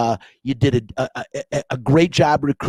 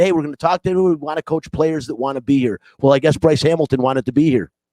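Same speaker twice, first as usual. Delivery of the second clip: normal talking voice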